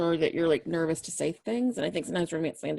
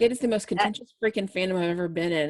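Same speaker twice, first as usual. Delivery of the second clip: ordinary talk, nothing marked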